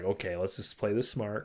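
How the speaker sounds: ordinary delivery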